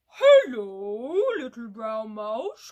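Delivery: big, deep, low monster voice, long drawn-out hello. Inviting listeners to join in a sound like the Gruffalo, big low Gruffalo voice. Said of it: "Big, low voice".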